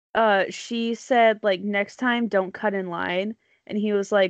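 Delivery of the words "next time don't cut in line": usual speaking voice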